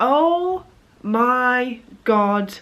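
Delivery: put-on stunned horror, very slow, drawn-out "my". Retelling a first reaction to getting a result: retelling being horrified. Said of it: "I was literally horrified".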